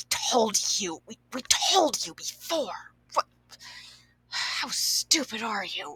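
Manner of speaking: very quiet, hushed, breathy near-whisper. Describing the other one and imitating how they talk, in a very quiet, whispery voice. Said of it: "speaks in a very quiet, almost like whispery kind of voice".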